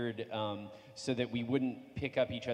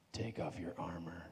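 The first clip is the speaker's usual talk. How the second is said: as suggestive as possible, creepy, put-on delivery; 5 semitones lower, 8 dB quieter than usual. Performing the recorded line after a panelist asks to hear it: very suggestive line delivery. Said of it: "a very suggestive line that I said as suggestively as I possibly could".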